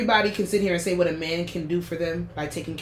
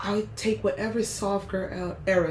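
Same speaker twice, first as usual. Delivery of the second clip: soft, nice, calm tone, quieter; 4 dB quieter than usual. Saying which era you would choose: nice and calm voice. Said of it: "my voice gets real nice and calm".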